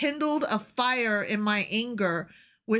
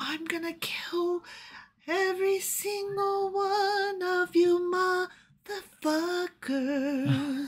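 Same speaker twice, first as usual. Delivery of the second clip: mock soft, pretty, whispery ASMR voice, higher; 8 semitones higher than usual. Imitating a scripture writer threatening everyone: mock soft ASMR voice. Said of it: "so pretty and, like, like, A S M R murder".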